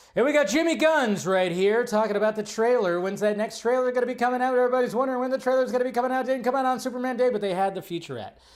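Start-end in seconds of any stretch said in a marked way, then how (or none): 0.2-7.3 loud, rapid, rattled-off auctioneer-style patter. Getting carried away introducing a guest, in fast auctioneer patter. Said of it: "I sounded like an auctioneer right there".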